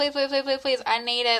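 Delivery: normal talking voice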